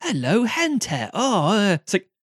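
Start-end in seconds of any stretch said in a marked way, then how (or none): 0.0-1.1 high, dopey, stupid-sounding put-on Suffolk accent. Comparing Norfolk and Suffolk accents for someone, demonstrate a stupid-sounding Suffolk accent. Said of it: "the Suffolk accent's really stupid. It's like".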